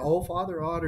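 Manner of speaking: put-on Minnesota accent. Quoting how Martha addresses the speaker, in a Wisconsin-Minnesota accent. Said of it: "with that Wisconsin, Minnesota accent".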